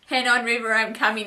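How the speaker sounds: plain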